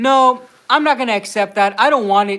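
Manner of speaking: put-on valley girl way of talking. Retelling how a partner scolds after watching english shows: imitating valley girl voice. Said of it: "she'll talk to me like a valley girl".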